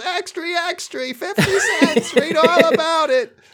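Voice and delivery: very high, drawn-out street newsboy call. Acting out a newsboy selling papers: newsboy voice. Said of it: "This is where the newsboy comes in".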